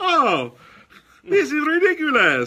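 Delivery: high-pitched, slow, drawn-out comedic Russian accent. Mocking an eighties comedy russian: eighties comedy russian accent. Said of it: "eighties Russian funny".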